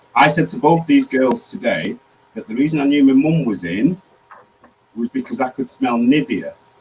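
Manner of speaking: emotional, welling-up voice catching with emotion. Telling viewers how the speaker knew their mum was in the kitchen: emotional. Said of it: "And I'm getting emotional".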